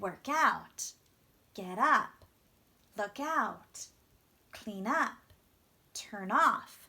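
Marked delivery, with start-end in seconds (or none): 0.0-0.9 heavy stress on the particle out in work out. English lesson on stressing phrasal verb particles, saying work out with stress on out. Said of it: "You want that stress on that small ending part".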